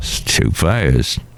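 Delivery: low, slow, grumpy fiddler grumble.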